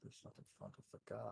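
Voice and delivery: very quiet whispered aside. In a role-playing game, a player whispers their character's words to a companion. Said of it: "Sorry, I'm always whispering when I do this".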